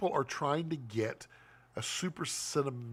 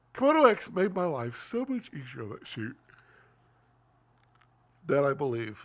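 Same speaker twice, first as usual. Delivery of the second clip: speaking through a yawn, louder; 5 dB louder than usual. Speaker talking about a camera setup on a shoot; yawning while talking. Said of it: "I'm yawning".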